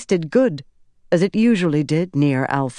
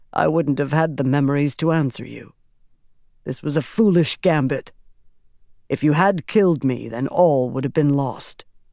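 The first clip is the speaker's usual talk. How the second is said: ordinary delivery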